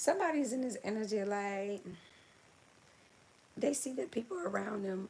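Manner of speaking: voice breaking and cracking mid-line. Talking to viewers who are chatting in the comments: voice cracking. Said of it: "my voice is cracking".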